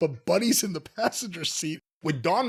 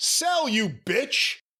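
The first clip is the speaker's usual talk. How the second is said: put-on, pitched-up voice, called out loudly; 6 semitones higher than usual. Telling how a wrestler called to his opponent before the crowd, retelling a very loud callout. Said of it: "Buddy just says very loudly".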